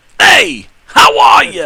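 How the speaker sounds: very slow, loud, rough Philly Italian mobster growl. Doing the voice again after a player comments on it: Italian mobster voice. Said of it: "an Italian type of mobster, type of gangster".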